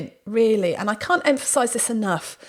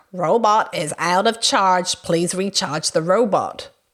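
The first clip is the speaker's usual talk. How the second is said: put-on electronic robot voice, announcer style; 4 semitones lower than usual. Retelling what the out-of-charge robot said: imitating an electronic robot voice. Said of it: "this electronic voice came out saying".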